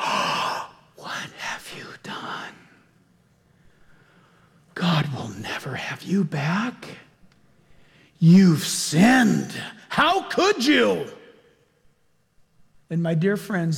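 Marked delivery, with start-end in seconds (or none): 0.0-11.1 slow, accusing, condemning voice with swooping pitch. Voicing Satan turning on a believer who crossed the line: accusing Satan voice. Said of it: "turns right around and says".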